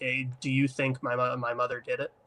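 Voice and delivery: imitated pleading child voice. Retelling a film scene where a child pleads with his caretaker: imitating a pleading child. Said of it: "pleading with her, like".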